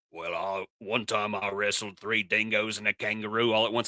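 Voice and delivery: put-on soft, tough outback Australian accent. Joking about spider encounters, the speaker pictures an outback man in a tough Australian man voice. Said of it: "picturing a big tough Australian".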